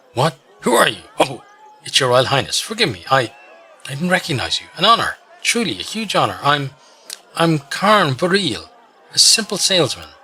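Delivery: anxious gnome voice, nervous, high, stammering. Narrator voicing a gnome salesman who suddenly notices a royal highness, speaking nervously. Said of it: "Nervously, noticing you, he grabs".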